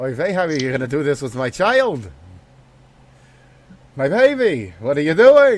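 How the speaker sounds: loud put-on Brooklyn accent, nagging woman voice.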